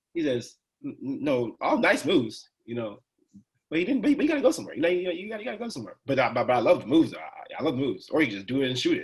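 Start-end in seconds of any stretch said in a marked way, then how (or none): 0.9-6.0 heavily sarcastic voice, high and swooping. Retelling a coach's comment in a film session: imitating Coach Krug's sarcasm. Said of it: "his sarcasm is, like, a little different".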